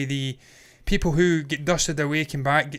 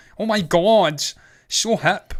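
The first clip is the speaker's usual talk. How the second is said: put-on loud Americanized Scottish hipster accent; 4 semitones higher, 5 dB louder than usual. Mocking Glasgow Uni hipsters to a listener: Americanized Scottish hipster accent. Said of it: "They've kind of got the Americanized Scottish accent".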